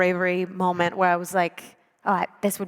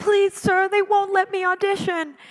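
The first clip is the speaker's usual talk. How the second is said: crying, begging voice, very high and tearful; 13 semitones higher, 3 dB louder than usual. Retelling talking backstage at an audition as a kid, imitating past self crying. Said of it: "I was like crying".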